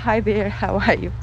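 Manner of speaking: ordinary talk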